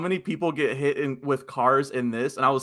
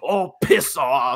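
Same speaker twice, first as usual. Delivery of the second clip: put-on, heated, angry voice in Australian accent; 4 dB louder than usual. Describing the scene where the gang leader slaps him: retelling an angry australian line. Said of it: "he's, like, all angry about it".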